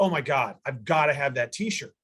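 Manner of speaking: ordinary delivery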